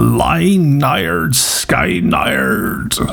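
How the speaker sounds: Cornwall accent. Recalling trying to pronounce an album title in HMV, in a Cornish accent. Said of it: "made myself sound all Cornish there".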